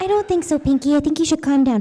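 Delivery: high cartoon pony voice. Answering a fan's request for a Fluttershy and Pinkie Pie conversation: Fluttershy voice. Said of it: "Fluttershy and Pinkie Pie have a conversation".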